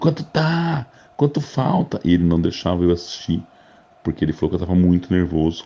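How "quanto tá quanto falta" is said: mock very high, stretched-out yelling. Retelling shouting questions from a bedroom during a match: imitating own past shouting. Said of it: "no meu quarto gritando".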